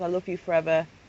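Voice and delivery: normal talking voice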